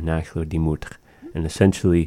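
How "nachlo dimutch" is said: usual speaking voice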